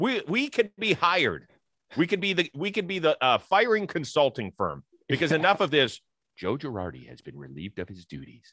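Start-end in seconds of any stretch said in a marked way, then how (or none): 6.4-8.5 put-on gentle, like talking to small children, much lower, quieter. Speaker jokingly announces a manager's dismissal as if to a kindergarten class. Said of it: "we're announcing it to a kindergarten class and we don't want to scare them".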